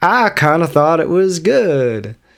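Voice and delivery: slow, weird, drawn-out delivery. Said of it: "I'm gonna stop talking like this".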